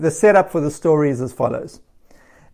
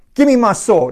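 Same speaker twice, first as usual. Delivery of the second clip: angry, irate delivery; 5 semitones higher than usual. Retelling the story of David and Nabal, acting out David's irate anger. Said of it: "David is irate".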